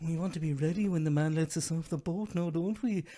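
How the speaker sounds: put-on Irish accent. Imitating an actor telling her kids to get off the boat: put-on Irish accent. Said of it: "she's talking to her kids in Irish".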